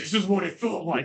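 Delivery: deep, heavily filtered villain voice. Voicing Clementine remembering being picked up: deeply filtered Darth Vader voice. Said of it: "it's this deeply filtered, like, Darth Vader version of Clementine's voice".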